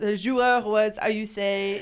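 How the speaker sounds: English with a put-on French accent. Asked how he would say a line, the speaker tries it in a french accent. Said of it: "with the French accent".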